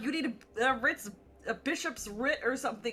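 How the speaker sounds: ordinary talk, nothing marked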